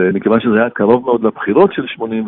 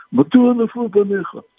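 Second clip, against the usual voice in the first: put-on man's voice, higher pitch, slower pace; 12 semitones higher than usual. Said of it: "זה היה בטון של בגין".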